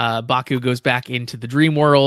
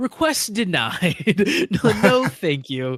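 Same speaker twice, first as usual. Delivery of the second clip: put-on gleeful voice, higher; 7 semitones higher than usual. Retelling a scene where Zero at the desk denies a request: imitating Zero gleefully. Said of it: "kind of very gleefully is like".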